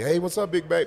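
gangster-style street talk. Speaker retells how a woman greets him in messages, gangster voice. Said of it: "She talks like a gangster".

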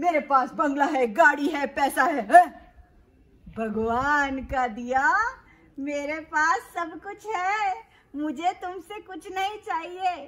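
self-assured, proud, boastful tone. Narrating a story, the Brahmin answers the king; speaking as the Brahmin. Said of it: "अरे फिर एक दिन राजा के द्वार में एक ब्राह्मण, एक पंडित जी आए। Mm-hmm. नाम अपना [name] बतलाए। / नाम अपना [name] बतलाए। / उसकी बात भी नहीं कर रही मैं।".

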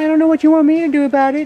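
shrill, loud, very high, poorly done dog voice. Speaker voices Buffy while trying to get the camera to focus, poor Buffy voice. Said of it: "that's a poor voice for her".

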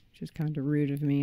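normal talking voice

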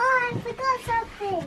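put-on soft, high, babyish baby-talk voice. Customer playing shop at the till: baby voice. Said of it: "Don't do baby voice".

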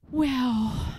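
sighed speech. A king finally turns to someone who shouted into his ear, sighing. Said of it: "sighed King Bertram".

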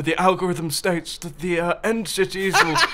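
put-on nerdy narrator voice. Explaining a game's algorithm, speaker slips into a nerdy David Attenborough voice. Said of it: "Do that nerd voice again. / That was like semi David Attenborough".

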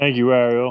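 choked-up voice, barely holding back tears. Thanking the host at the end of an interview: on the verge of tears. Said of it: "I can't really talk right now without crying".

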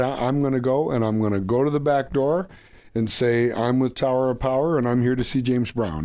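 ordinary delivery

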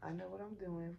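ordinary delivery

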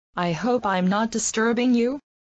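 ordinary delivery

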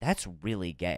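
play-acted earnest, worried, low, concerned tone. Retelling what a guy said on walking into the bathroom, mock-concerned. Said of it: "He said this like concerned".

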